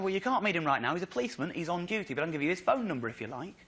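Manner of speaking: normal talking voice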